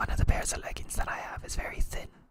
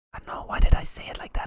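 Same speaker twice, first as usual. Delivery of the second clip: ordinary talk, nothing marked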